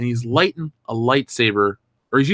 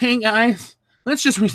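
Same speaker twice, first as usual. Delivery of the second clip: very high put-on voice, going very high then breaking off; 11 semitones higher than usual. Acting out a scene of film makers planning new films: Rian Johnson voice. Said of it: "I can't even do that voice".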